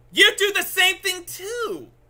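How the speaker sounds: very high-pitched, loud shout. In a heated argument, turning the accusation back on the other person: raised voice. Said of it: "I had to raise my voice".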